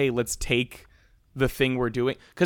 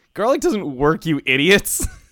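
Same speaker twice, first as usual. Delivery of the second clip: loud words spoken through laughter; 4 semitones higher, 6 dB louder than usual. Retelling a movie vampire's line to the Frog Brothers: imitating someone laughing. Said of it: "he just starts laughing".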